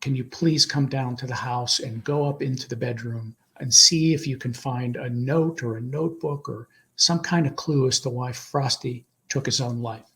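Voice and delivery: normal talking voice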